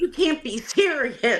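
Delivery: put-on agitated, heated, high-pitched voice. Retelling a customer's reaction to a price: imitating a heated customer. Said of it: "it's starting to get really heated".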